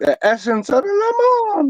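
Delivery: put-on very high, sing-song falsetto of an old Italian man. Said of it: "like a falsetto voice".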